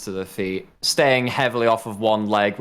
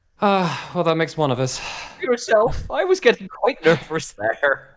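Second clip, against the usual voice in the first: put-on Irish accent, high and swooping; 8 semitones higher than usual. Playing a character in the game, reply in an Irish accent. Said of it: "I've gone all Irish on you all".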